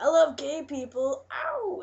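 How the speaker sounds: mock rude, very slow, drawn-out sarcastic sing-song catcall. Retelling catcalls yelled from the back of a bus: imitating a sarcastic, rude catcall. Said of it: "it was all sarcastic and rude".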